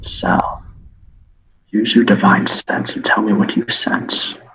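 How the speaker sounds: very quiet, hushed, under the breath. Voicing Cash signalling the party to stay silent: very quiet voice. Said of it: "he's gonna say very quietly".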